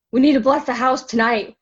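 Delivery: mock panicked breathlessness. Retelling an ex-husband running in from a nap: imitating someone panicked and breathless. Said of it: "he's out of breath and freaking out".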